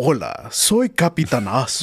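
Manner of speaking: swooping cartoon superhero voice. Describing a Mexican voice actor's Spanish dub roles; Captain Hero voice. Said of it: "And for Captain Hero, he's like".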